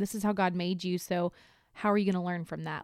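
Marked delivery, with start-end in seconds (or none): none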